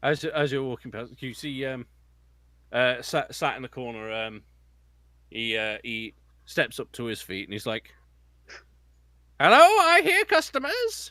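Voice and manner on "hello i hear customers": put-on elderly dwarf voice, much higher and louder. Narrator voicing a shopkeeper who rises to greet customers: [name]'s elderly dwarf voice. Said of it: "he's quite an elderly dwarf".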